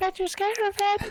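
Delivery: put-on American girl voice, very high, very soft. Acting out an online chat, a speaker voices the American gal in an American gal voice. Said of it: "you gotta do that voice now".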